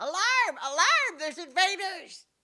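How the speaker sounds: very high, shrill, loud yelling goblin voice. Speaker voicing a receding goblin the listeners all hear, shouting goblin voice. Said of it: "shouting goblin voice saying".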